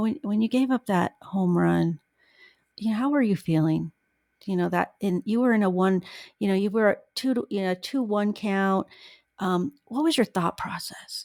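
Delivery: hushed, reverent, funeral-quiet reporter voice. Speaker mocking how reporters question players, mock hushed reporter tones. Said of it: "they're always in hushed tones".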